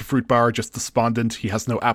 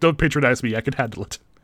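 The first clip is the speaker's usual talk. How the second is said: normal talking voice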